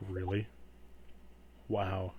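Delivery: unimpressed, flat, blank deadpan. Voicing a figure who turns and stares blankly: blank, unimpressed deadpan. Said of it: "staring at you, like, blankly".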